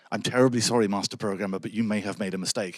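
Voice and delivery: mock apologetic, near-apologetic tone. Recounting a class where a student points out an error, imitating an apologetic student. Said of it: "almost being apologetic".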